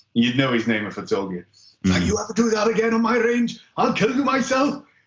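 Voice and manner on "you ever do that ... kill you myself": put-on big, broad, thick Welsh accent, very high-pitched. Retelling how an SF instructor told him off on the range, thick Welsh accent. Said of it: "in his big, thick Welsh accent".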